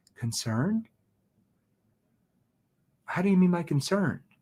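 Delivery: puzzled, probing, confused questioning tone. Coaching a listener on when to sound confused; confused questioning tone. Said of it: "That's when you use a confused tone".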